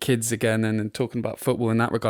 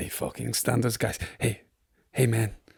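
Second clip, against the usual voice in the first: laid-on, put-on Mexican-sounding accent; 3 dB quieter than usual. Retelling what Arteta said to Roman Kemp on the plane, in an Arteta voice, sounding Mexican. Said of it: "Why did I make him sound Mexican?".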